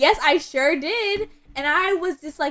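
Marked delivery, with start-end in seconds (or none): 0.0-1.3 put-on pride, higher, slower. Recounting a guy confirming what a woman remembered about him, mock-proud retelling. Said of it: "he proudly goes".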